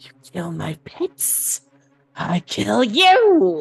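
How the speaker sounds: hissing, swooping monster voice, "you" stretched. Narrating an unseen creature threatening the players, hissing voice. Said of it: "almost a hissing voice go".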